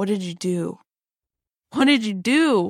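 acted tearful sobbing, crying voice. Retelling how a man came back and asked her, imitating someone crying. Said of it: "really, like, choked up about it".

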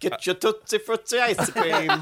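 put-on Italian accent. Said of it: "Sounds nothing like any Italian".

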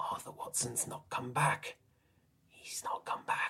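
secretive, conspiratorial, barely voiced hushed whisper. A man whispers over to you: conspiratorial whisper. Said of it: "He whispers over to you conspiratorially".

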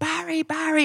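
high-pitched calling scream. Telling a story about a man at a nightclub door, retelling a scream. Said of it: "And he was screaming".

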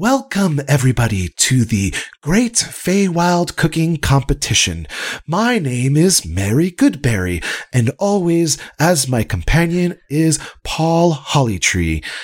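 high fairy voice, announcer style. Narrator voicing a fairy addressing a crowd on a field, fairy voice. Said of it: "the fairy goes".

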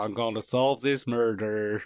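put-on Southern accent. Joking about doing accents in a role: funny southern accent. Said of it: "he can do funny southern accents".

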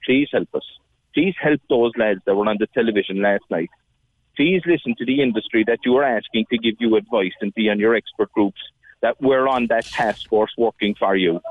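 normal talking voice

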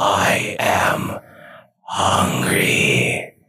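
voice layered over itself, two at once. Voicing a hungry character whose voice sounds doubled: doubled voice. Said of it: "and his voice is doubled".

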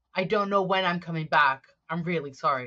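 normal talking voice

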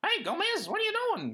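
pitched way up, comic. Describing a show's character, the speaker does Uncle Fester's comedic 1960s voice. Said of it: "that classic comedic 1960s voice".

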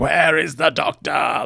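light, half-hearted, only sketched put-on big-voice yell. Retelling a scene, voicing a character who yells in a big booming voice. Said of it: "Like big booming voice".

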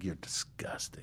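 mumbling under breath. Retelling what a waiter said after the diners left: imitating someone mumbling under breath. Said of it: "he mumbled under his breath".

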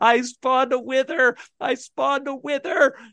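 high, hysterical words through sobbing tears. Retelling the words he kept repeating, imitating sobbing through tears. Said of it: "all he can say to me through his tears".

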